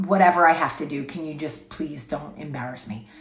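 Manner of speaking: mock hushed under-breath voice. Retelling how Chris begged him not to embarrass him, imitating Chris under his breath. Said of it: "trying to talk under his breath".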